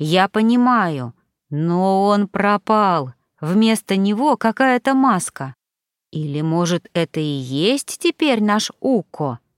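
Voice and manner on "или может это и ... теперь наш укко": plain reading voice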